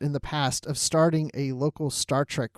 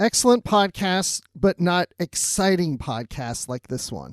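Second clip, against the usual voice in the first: plain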